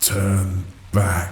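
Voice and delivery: uncanny, unearthly, haunting, eerie half-whisper. A silver wolf speaks to the narrator without moving its lips: haunting half-whisper. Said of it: "it whispered".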